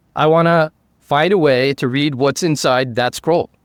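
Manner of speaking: usual speaking voice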